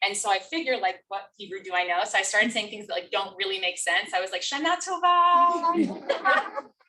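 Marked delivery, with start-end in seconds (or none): 4.4-6.6 put-on heavy American accent with very high pitch. Retelling comforting a sobbing boy from a new Israeli family, very American accent. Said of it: "In my very American accent".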